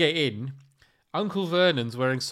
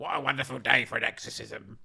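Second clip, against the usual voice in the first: horrible, low, rasping, creaky evil demon voice; 4 semitones lower, 5 dB quieter than usual. Asked to voice an evil demon for a horror film, horrible evil demon voice. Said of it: "imagine her putting on a horrible voice".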